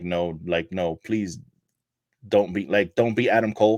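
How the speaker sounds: play-acted tearful, crying, begging plea. Acting out an imagined wrestler begging an unmasking opponent: imitating MJF crying and pleading. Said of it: "crying and just looking at him like".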